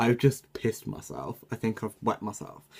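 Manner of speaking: ordinary talk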